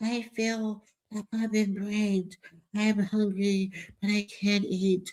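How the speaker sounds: soft, hushed celebrity-style voice. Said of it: "She got that [name] voice going on".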